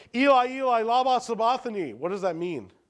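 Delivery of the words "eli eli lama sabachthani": yelling out loudly. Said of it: "he yells out".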